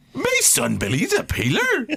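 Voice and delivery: very high pitch swooping up and down. Trying out an impression of a sitcom character: Uncle Andy voice. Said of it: "Uncle Andy impressions".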